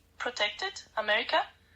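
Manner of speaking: ordinary talk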